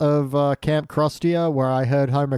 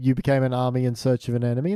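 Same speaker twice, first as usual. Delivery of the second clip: usual speaking voice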